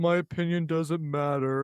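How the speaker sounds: dull, flat, sad, mournful monotone. Retelling what someone said while playing with Legos: mock-sad monotone as Abby. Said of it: "monotone, sad voice".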